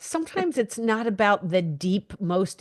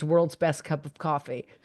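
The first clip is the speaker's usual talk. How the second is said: ordinary talk, nothing marked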